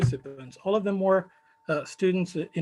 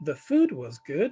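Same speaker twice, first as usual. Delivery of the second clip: fall-rise tone, pitch dipping then climbing on good; 2 semitones lower than usual. Intonation lesson, someone answering about a wedding: fall-rise tone on good. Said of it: "the tone being used here is a fall rise".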